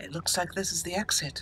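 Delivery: muttered under the breath. Kenlin, out of earshot after walking away, speaks to herself: quietly to herself. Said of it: "she says quietly to herself".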